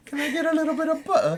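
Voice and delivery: put-on English accent, very high. Showing an English accent that is still being worked on: put-on English accent. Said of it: "I'm working on England right now".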